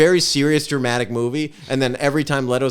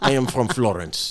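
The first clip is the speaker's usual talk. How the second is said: put-on Russian accent; 2 semitones lower than usual. Imitating a film character claiming to be Italian: Russian accent as an Italian. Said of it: "It's fully Russian".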